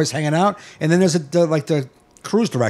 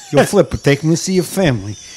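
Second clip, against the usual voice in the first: mob hit man, tough-guy voice. Repeating the other speaker's line back to them: imitating a mob hitman voice. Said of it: "You sound like a mob hit for the Flipper".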